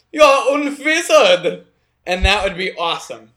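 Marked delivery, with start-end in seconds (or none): 0.1-1.6 put-on German accent, loud and raised. Imagining hearing the line from someone with a German accent, German accent. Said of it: "with a German accent".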